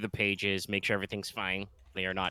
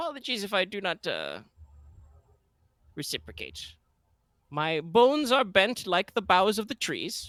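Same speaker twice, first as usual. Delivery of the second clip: put-on very high, swooping old priest voice; 11 semitones higher, 5 dB louder than usual. Voicing an older priest greeting a young man: Mortimer voice. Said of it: "he kind of inclines his head".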